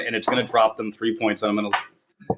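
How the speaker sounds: plain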